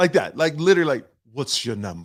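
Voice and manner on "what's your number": mock haughty, snooty, entitled attitude. Retelling how a lady in the boarding line asked: imitating a lady with attitude.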